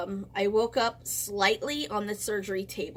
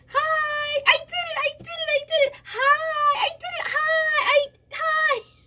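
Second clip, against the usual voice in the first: very high, loud, proud, repeated hollering; 7 dB louder than usual. Telling how they greeted everyone while wheeled out of surgery, retelling a yell. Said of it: "I'm going down the hall yelling hi".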